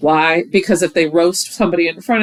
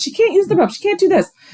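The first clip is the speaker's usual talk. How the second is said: yapping, yippy, very high-pitched voice; 13 semitones higher than usual. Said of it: "Amber's yippy ass comes over and is like".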